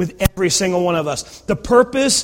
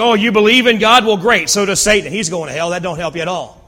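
mock, cutting, scoffing sarcastic tone. Retelling James's comment on believing in God: sarcastic James paraphrase. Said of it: "a kind of a sarcastic comment James gave".

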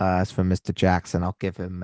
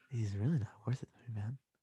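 fast, stoned-sounding whisper. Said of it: "I could just sound tired and stoned".

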